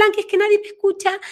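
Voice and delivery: put-on tiny little-girl voice, high and fast.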